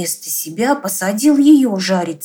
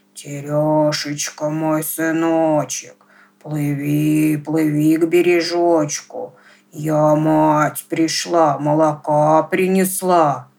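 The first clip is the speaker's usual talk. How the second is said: eerie, menacing, scary witch voice; 4 semitones lower than usual. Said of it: "зовет страшным голосом".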